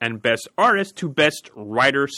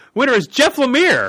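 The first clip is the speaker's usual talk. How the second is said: excited, loud, high-pitched yell; 11 semitones higher, 6 dB louder than usual. Announcing the winner of an award category: yelling. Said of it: "I don't mean to yell".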